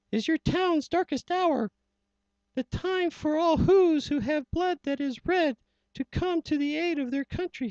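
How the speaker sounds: scared, urgent, frantic rousing cry, very high. Reading a rhyming story aloud, as the scared little mayor crying out. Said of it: "And down on the dustbek the scared little mayor quick called a big meeting in the [name] town square, / he said".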